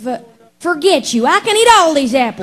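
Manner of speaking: high, loud, angry cartoon voice. Voice actor answering an interviewer's request for a line, in angry Applejack voice. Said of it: "in an angry Applejack voice".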